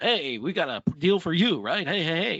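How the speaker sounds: cheesy used car salesman radio DJ voice. Speaker jokes about not acting like a used car salesman; DJ radio voice. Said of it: "That's my D J radio voice".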